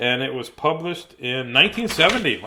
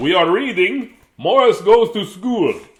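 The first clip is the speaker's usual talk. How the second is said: put-on storybook vampire voice, loud and pitched up; 6 semitones higher, 7 dB louder than usual. Opening the show, the host announces today's book: vampire voice. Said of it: "I don't know why I'm doing it in a vampire voice".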